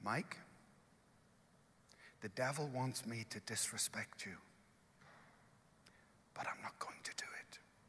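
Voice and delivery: very hushed, quiet, gracious delivery. Retelling what a wife said as he left for a walk: quiet, gracious words. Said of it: "she very quietly and very graciously said these words".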